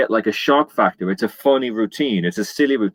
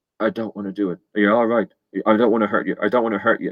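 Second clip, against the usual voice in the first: put-on whisper in a man's voice. Retelling how the drunk man whispered holding the hammer: imitating a man whispering. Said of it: "he was whispering".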